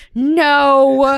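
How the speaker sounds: put-on irritated tone, dragged-out and drawn-out. Retelling how the stepdad refused the surprise, imitating his annoyed refusal. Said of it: "he just goes".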